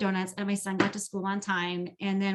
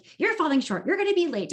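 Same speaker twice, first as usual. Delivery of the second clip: put-on frantic, panicked voice, higher and louder; 9 semitones higher, 4 dB louder than usual. Voicing the voice in her head about falling short; chicken-with-its-head-cut-off voice. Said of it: "this chicken with its head cut off kind of voice".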